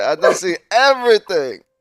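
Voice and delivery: put-on old Jamaican man impression. Retelling what an old man said to them, in an old Jamaican man accent. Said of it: "It was like an old Jamaican man".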